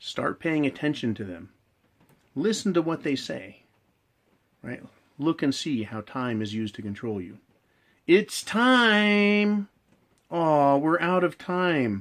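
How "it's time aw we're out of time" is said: mock teacher voice, very slow, high, condescending. Mimicking a woman who uses time to control a man, mock condescending teacher tone. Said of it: "Always in the condescending teacher tone".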